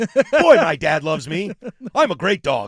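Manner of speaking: slow, loud, cheerful, happy cartoon dog voice. Voicing a dog's thoughts, in the voice of the dog from Up. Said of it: "in the voice of the dog from Up".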